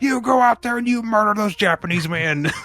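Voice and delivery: put-on loud bossy shout. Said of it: "the really loud police commissioner".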